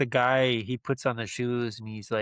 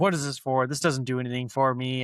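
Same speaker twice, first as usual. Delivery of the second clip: ordinary talk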